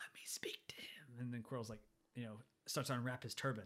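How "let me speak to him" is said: soft, slow whisper. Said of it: "we get the whispers again".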